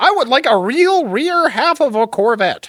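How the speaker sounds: put-on American accent. Imagining a Chinese guy making fun of America, the speaker does a Chinese guy mocking American accent. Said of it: "like a Chinese guy making fun of America".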